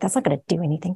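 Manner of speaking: mock-cynical voice. Describing the cynical voice the speaker was trained in, imitating a cynical voice. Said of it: "I've been trained in a cynical voice".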